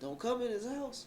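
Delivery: high, put-on hollering. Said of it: "he was hollering at them like".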